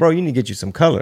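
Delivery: mock, dry, sarcastic tone. Retelling a remark to a very tan comedian: retelling own sarcastic remark. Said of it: "I was being sarcastic".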